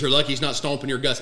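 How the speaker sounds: normal talking voice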